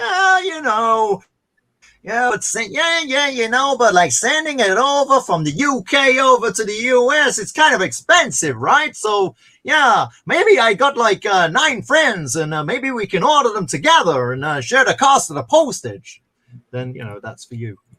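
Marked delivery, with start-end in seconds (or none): 0.0-16.2 very high, botched, bad put-on Mexican accent. Acting out what friends might say about shipping costs: attempted mexican accent. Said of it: "I was trying to do a Mexican accent".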